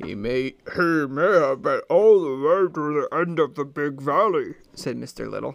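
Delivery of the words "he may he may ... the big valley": unhurried, slow, deliberate character voice. Reading a story aloud, doing a character's line: imitating Scarlet's Mister Little voice. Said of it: "That's how Scarlet does his voice".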